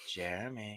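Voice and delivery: very soft, barely audible half-whisper. Retelling a late phone call from her: imitating someone half-whispering. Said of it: "she's, like, whispering".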